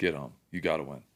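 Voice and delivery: put-on whispering. Retelling words whispered to oneself during the last drive: imitating own whispering. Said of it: "whispering to myself".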